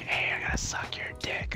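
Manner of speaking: put-on soft voice. Retelling what a player on the blue team said to him, imitating a soft voice. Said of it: "I'm hearing a soft voice".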